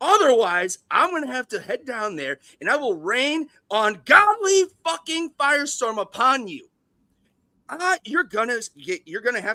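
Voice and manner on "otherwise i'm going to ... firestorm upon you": put-on angry executive voice, higher. Doing an impression of Les Grossman threatening someone on a call: Les Grossman impression. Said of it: "I'm gonna do my best Les Grossman impersonation".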